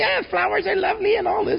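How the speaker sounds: very high, rushed, creaky, whiny voice. Mocking a meditation guru's talk, in a high, whiny guru voice. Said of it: "a high, whiny voice can say".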